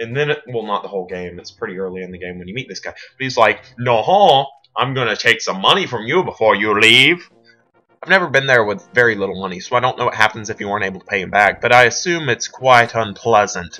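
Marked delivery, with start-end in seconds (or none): 3.8-7.3 mock French accent, slower. Describing a Wind Waker character who charges for damages, the speaker imitates a French accent. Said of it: "he has a French accent".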